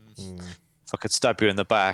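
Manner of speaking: ordinary talk, nothing marked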